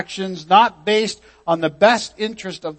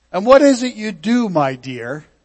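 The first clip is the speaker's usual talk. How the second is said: play-acted patronizing, condescending talking-down tone; 2 semitones higher than usual. Quoting someone questioning Mrs. Campola about her work, imitating a condescending tone. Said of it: "You hear the condescension?".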